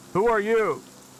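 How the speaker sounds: shouting. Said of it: "One of them will yell out".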